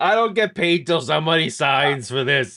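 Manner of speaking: bad, terrible put-on Jersey accent. Playing a scene with another speaker, in a bad Jersey accent. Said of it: "We're both terrible at Jersey accents".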